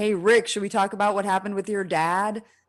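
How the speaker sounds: acted-out pretend yell. Discussing a character, acting out a shout he would not make, mock yelling down a hall. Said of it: "he's not yelling down the hall like".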